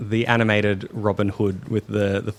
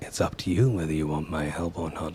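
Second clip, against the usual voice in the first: very low, rumbling, hushed half-whisper; 6 semitones lower, 7 dB quieter than usual. A game master voices a creature speaking only to Banji, very low half-whisper. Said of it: "you hear a very low whisper".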